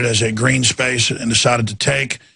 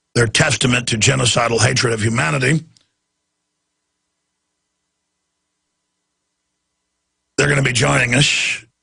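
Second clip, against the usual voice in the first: hoarse, strained, labored voice, nearly gone. Speaker whose voice is gone today, pushing through: hoarse, labored voice. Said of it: "It's just laborious to talk".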